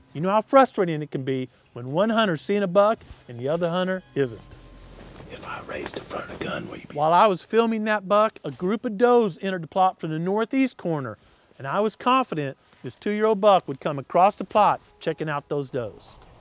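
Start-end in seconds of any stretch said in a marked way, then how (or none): 5.3-7.1 very quiet, hushed, barely voiced whisper. Hunter in a ghillie blind speaks to Dad with a buck nearby, whispering.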